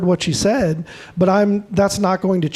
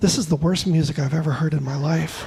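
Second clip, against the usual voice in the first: put-on very sweet, sugary, pleasant delivery; 3 semitones lower, 5 dB quieter than usual. Retelling what a lady said after a concert: imitating a very sweet tone. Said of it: "very, very sweet, she said".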